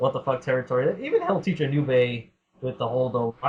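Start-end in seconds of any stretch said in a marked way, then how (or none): none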